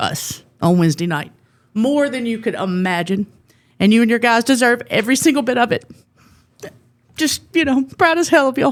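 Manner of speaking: on the verge of tears. Speaker wrapping up the vibe check, addressing the coach and his team, tearful. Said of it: "you need to stop crying".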